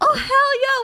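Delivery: gleeful, very high, loud whooping cheer.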